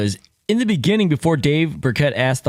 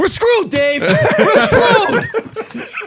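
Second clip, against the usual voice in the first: very high, drawn-out, raised delivery; 5 dB louder than usual. Imitating a coach answering one more follow-up question: imitating Dan Campbell. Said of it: "Dan Campbell would have been like".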